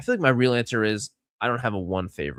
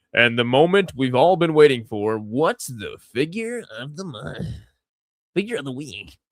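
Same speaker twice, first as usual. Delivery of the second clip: fight-night main event boxing ring announcer voice; 4 semitones higher than usual. Introducing the figure of the week segment, in a boxing announcer voice. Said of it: "use the the boxer announcer Serdork voice for this one".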